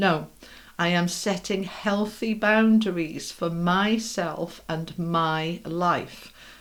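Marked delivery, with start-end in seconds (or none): 4.7-6.3 slow, drawn-out stress on my. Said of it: "Emphasis on the my".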